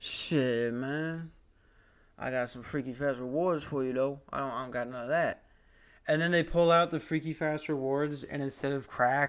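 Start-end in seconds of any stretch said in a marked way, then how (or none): 0.0-5.4 Southwestern local's way of talking. Acting out a Jimmy John's worker handing over rewards: put-on Southwest guy voice. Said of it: "they talk like this".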